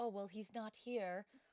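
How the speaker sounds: ordinary talk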